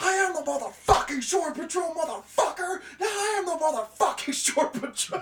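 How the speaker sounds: shrill, full-throated, very loud, high-pitched shouting. Retelling a movie bar scene where a gun comes out, doing a Jack Nicholson shouting impression. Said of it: "Nicholson whips out his gun, he's like".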